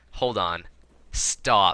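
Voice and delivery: ordinary talk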